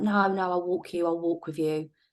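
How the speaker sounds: normal talking voice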